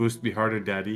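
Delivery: normal talking voice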